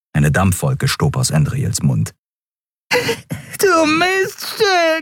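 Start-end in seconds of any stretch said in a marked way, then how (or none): 3.6-5.1 high yelping cry of pain. A man whose nose Andriel's elbow just broke, yelping. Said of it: "jaulte er und hielt sich die Nase".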